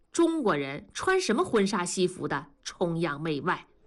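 ordinary talk

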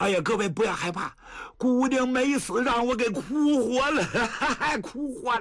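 laughing while speaking.

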